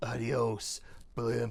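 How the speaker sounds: low, tough action-hero voice, movie-hero style. Retelling how a cartoon character first talked: Attie McGee voice, Stallone-like. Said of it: "very kind of Sylvester Stallone, uh, Clint Eastwoody".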